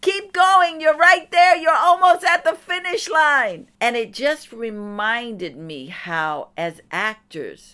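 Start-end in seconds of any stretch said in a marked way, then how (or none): 0.0-3.7 shrieked, very high and very loud screaming. Retelling urging a guy in a wheelchair across the street: retelling own screaming. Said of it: "I was screaming".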